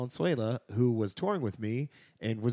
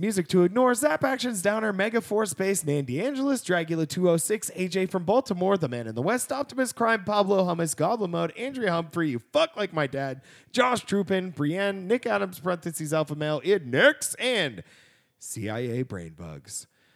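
loud, breathless rush rattled off in one breath; 7 semitones higher, 5 dB louder than usual. Host reads a long list of Patreon supporter names, all in one breath. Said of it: "All in one breath".

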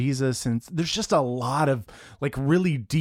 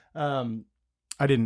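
usual speaking voice

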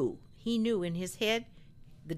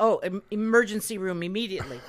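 usual speaking voice

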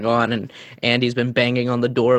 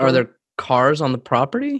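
ordinary delivery

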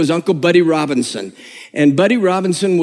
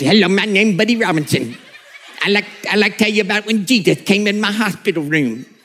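cartoonish put-on cartoon character voice; 3 semitones higher than usual. Retelling a tape of an old preacher: imitating Elmer Fudd-like voice. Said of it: "a voice that sounded like Elmer Fudd".

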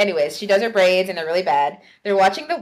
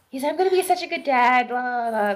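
put-on all-excited, over-eager, high enthusiasm; 5 semitones higher than usual. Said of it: "all excited".

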